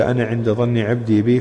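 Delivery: ordinary talk, nothing marked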